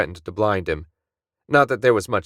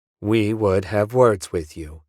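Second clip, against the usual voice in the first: synthetic computer voice, almost human. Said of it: "A computer voice, the kind that, despite centuries of trying, still didn't sound quite human".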